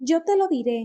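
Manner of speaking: loud, high-pitched shouted outburst. Narrator reads a woman cutting a man off before he can speak, shouting. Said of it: "ella gritó".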